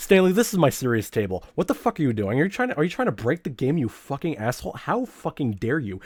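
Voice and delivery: mock furious, scandalized, swearing scold. Retelling how the game reacts to cheats: imitating the game angrily scolding. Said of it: "it's like".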